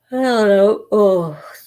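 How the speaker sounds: words spoken through a yawn. At midnight with an early appointment tomorrow, speaker is yawning while talking. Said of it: "sorry. I'm yawning".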